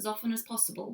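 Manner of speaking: ordinary delivery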